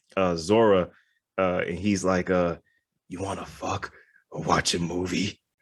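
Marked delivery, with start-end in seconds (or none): 3.0-5.3 mock threatening, sinister, menacing delivery. Retelling a movie character's line to a girl: imitating a menacing line. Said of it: "he just says it, like, so menacingly".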